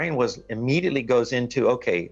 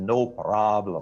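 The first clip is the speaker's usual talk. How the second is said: put-on mixed German and Russian accent; 3 semitones lower than usual. Quoting your pilot's answer to your question, in a thick German-Russian accent. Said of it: "his thick German, Russian accent".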